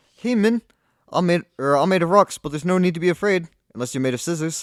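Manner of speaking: put-on high-pitched voice with New Zealand accent. Admitting their Kiwi accent is awful, speaker does a Korg impression anyway. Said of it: "Korg just goes uh".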